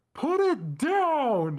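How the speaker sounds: very high, loud scream, stretched downward. Retelling how a helper screamed at a girl holding the ring: imitating a scream.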